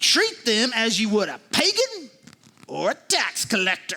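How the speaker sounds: vengeful, vindictive reading with a punishing edge. Reading a scripture verse aloud to show it in a vengeful tone. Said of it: "it has some sort of vengeful feel to it".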